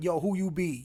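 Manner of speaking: voice in a strong American vernacular dialect. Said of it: "I don't wanna be hacky, but like".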